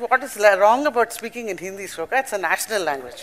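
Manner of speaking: ordinary delivery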